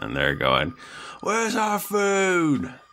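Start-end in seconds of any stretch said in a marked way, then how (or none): 1.2-2.7 very high dwarvish holler with words stretched out. Speaker retelling somebody heard on Lockup: retelling a yell in a dwarven accent. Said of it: "yelling with kind of a dwarven accent".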